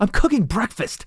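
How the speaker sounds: very high, offended, indignant, high-pitched retort. Retelling his reply when his wife walked in on his cooking: retelling being offended. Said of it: "I'm like all offended".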